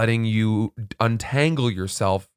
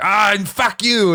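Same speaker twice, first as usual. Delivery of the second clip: very shrill, high, loud, slow, drawn-out comic outburst; 10 semitones higher, 5 dB louder than usual. Retelling a movie scene: imitating Will Ferrell's Austin Powers character. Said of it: "You're like Will Ferrell's character in Austin Powers".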